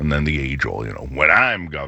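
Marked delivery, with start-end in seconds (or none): 1.1-1.9 derisive, scornful, mocking tone. Criticizing the governor, then quoting a phrase in a mocking tone. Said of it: "I say that in a mocking tone".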